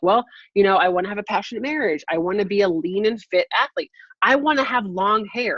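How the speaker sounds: usual speaking voice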